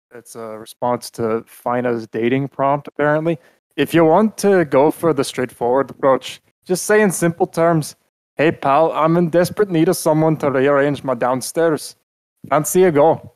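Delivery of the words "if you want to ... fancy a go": vaguely Irish put-on accent, roughly attempted. Speaker reads out a reply to a dating prompt, in a maybe-Irish accent. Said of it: "I don't know if that sounded more Irish or what".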